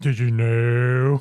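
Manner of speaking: low monotone voice. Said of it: "Very monotone, very Eeyore".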